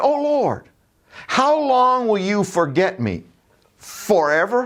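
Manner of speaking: sarcastic exasperation. Quoting David's prayer to God, with mock-sarcastic frustration. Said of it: "dripping with sarcasm and with frustration".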